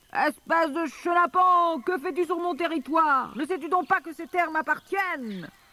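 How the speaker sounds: big, very high, loud, furious bellowing yell. A narrator reads the wolf's line as it yells at the boy Charlie, big voice yelling. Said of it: "Une grosse voix hurlait".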